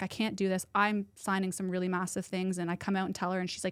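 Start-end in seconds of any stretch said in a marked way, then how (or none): 0.0-2.6 put-on tearful crying voice. Retelling a partner's words while she cried: imitating someone crying. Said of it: "She's crying".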